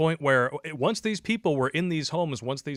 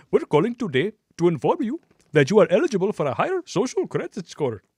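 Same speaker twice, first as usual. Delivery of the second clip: very bad put-on Indian accent, high and sing-song; 5 semitones higher, 6 dB louder than usual. Mock call about a higher social credit score, in a bad Indian accent. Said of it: "my worst Indian accent".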